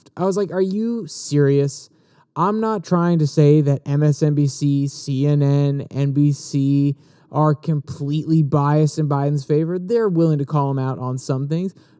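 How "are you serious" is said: mock dismissive, scoffing tone of disbelief. Retelling own reaction to reading a claim: imitating a scoff. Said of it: "I kinda just scoffed".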